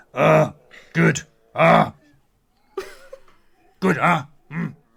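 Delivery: loud, slow, rough, grunting caveman voice. Acting out the character Zeke from a book being read, Zeke voice like Captain Caveman. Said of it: "I do Zeke".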